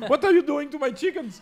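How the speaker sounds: shrill, very high, loud sobbing wail. Retelling own reaction to customers breaking the chocolates: mock crying. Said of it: "I'm behind the counter and I'm crying".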